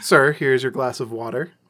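normal talking voice

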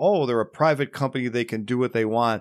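ordinary talk

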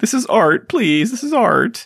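very high-pitched, pitiful pleading tone. Describing how Fozzie would say the line, pitiful Fozzie Bear impression. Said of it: "Fozzie says it more pitifully".

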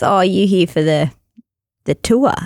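imitated Northern Irish accent. Retelling meeting a driver in northern ireland, the speaker quotes him imitating northern irish accent. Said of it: "next level accent".

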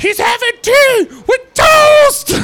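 very high, loud, belted in chest voice. Acting out a meek lady turning around to call an order, belted out loudly. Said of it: "turn around and just belt it out".

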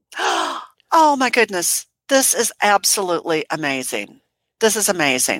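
choked up near tears, swooping pitch, very slow. Reacting to a five hundred dollar donation: close to tears. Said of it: "I'm gonna cry".

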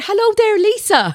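put-on Irish accent, very high-pitched. Asked to do an Irish voice, greeting someone in an Irish accent.

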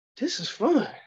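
put-on pitched way up, high kid voice. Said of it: "and I'm like".

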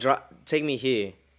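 acted forceful, aggressive voice. Retelling a drunk passenger's demand to be driven: imitating an aggressive demand. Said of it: "He's being very aggressive".

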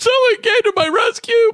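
sobbing, very high, tearful crying words.

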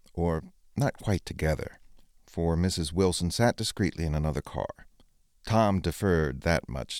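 ordinary delivery

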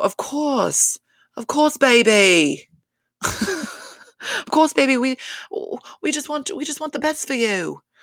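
put-on English accent. Retelling what Dorit said when she backpedals: imitating Dorit's bad English accent. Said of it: "not a good, um, you know, English accent".

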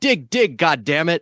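slow, put-on cry with an urging tone. Retelling a released tape of Nixon at a football game: imitating Nixon yelling. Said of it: "he's yelling".

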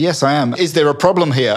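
plain

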